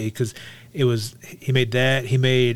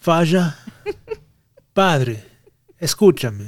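almost Italian, Italian-sounding accent; 4 semitones higher than usual. Rehearsing what to say to Dad, in an almost Italian accent. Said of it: "I sound Italian almost".

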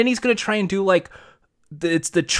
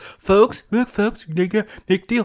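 put-on blustering politician voice, higher pitch; 4 semitones higher than usual. Showing how everyone else does a Donald Trump voice. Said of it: "Everyone's trying to do, like, the whole bolsters".

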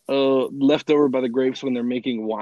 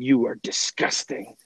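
mock scornful, contemptuous, disdainful tone. Retelling what a woman hit by spit said: imitating disdainful woman. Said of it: "looked at him with such disdain and just said".

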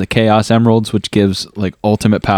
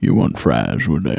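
very deep, rough voice; 8 semitones lower, 4 dB quieter than usual. Doing an impression of Sam Elliott working at McDonald's: Sam Elliott impression. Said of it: "this is my Sam Elliott impression".

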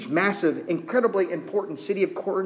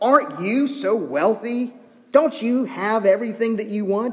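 acted-out, heavy, needling sarcastic tone; 4 semitones higher, 4 dB louder than usual. Acting out a letter's words to the Corinthians: imitating the Apostle Paul's sarcasm. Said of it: "sarcasm is great for doing this".

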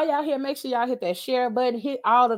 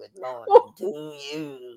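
mechanical, electrolarynx-like throat-device voice; 9 semitones lower than usual. Showing how they sound in the morning: imitating electrolarynx voice. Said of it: "I be sounding like a person with the little thing to their throat".

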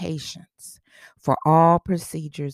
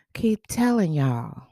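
Southern American drawl on the word y'all. Commenting on medical reports, slipping into a Southern voice: Southern American accent. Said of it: "I'm getting in my southern voice now".

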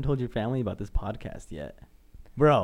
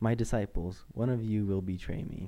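ordinary talk, nothing marked

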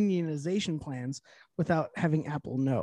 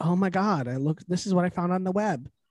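put-on camp voice.

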